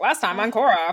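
put-on old-time 1920s transatlantic reporter voice. Imitating the show's recap narrator: old-time 1920s reporter voice. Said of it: "the old school nineteen twenties reporter".

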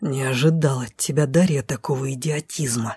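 seething, low, furious angry hiss. A man pins Darya against a tree and speaks into her ear: angry hiss. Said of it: "прошипел в ухо мужской, злой до чертиков голос".

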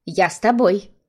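ordinary delivery

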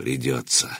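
gloomy, somber. An elder, asked if they must take the bridge by force, answers grimly. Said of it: "мрачно проговорил Добрыня".

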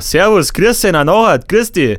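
put-on Munich dialect. Asked how people in Munich talk and to imitate it: imitated Munich accent. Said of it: "Wie spricht man in München? Mach das doch mal nach. ... So in etwa".

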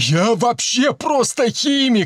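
frantic, desperate, high-pitched yell. A narrator reads the stoutest of the men, a desperate yell. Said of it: "заорал самый полный, отчаянно тряся подбородками".

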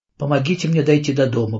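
ordinary delivery

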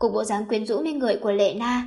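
ordinary delivery, nothing marked

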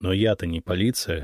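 ordinary delivery, nothing marked

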